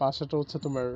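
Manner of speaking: plain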